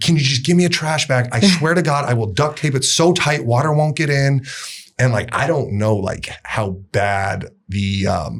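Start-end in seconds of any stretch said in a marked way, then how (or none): 0.0-4.4 mock, loud shouted yell. Retelling what they yelled at production during the challenge, retelling a yell. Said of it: "I was yelling like at production".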